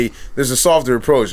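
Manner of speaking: normal talking voice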